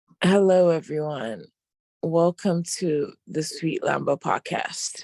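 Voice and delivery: sick, bedridden-sounding voice with a cold. Welcoming listeners to the podcast, sick voice, sounds like in bed. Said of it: "it sounds like you're in bed".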